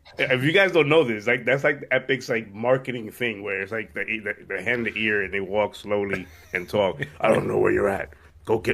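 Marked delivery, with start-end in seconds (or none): 7.2-8.8 grainy, croaking, rough and creaky comic-book villain voice. Talking to viewers about Epic's marketing, Joker voice. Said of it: "that's my best Joker voice".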